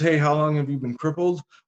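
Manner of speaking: plain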